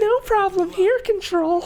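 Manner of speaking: very high, pushed-up, high-pitched put-on voice. Quoting a favorite pager line from Sydney: high-pitched Sydney voice. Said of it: "she goes all high pitched and goes like".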